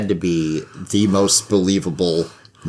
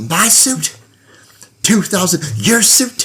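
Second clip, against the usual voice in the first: higher-pitched put-on ranting wrestler voice; 12 semitones higher, 4 dB louder than usual. Retelling Flair going off at an interviewer about suits: imitating Ric Flair going off. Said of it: "Flair was going off and he was like".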